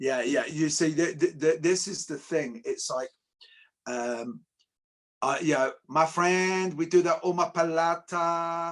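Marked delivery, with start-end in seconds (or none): 5.9-8.7 high, slow, put-on Brazilian Portuguese accent. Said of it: "Why are you talking like that?".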